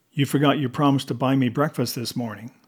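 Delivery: ordinary delivery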